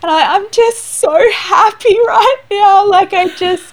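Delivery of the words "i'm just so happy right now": mock sobbing while talking, higher and louder. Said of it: "heave crying".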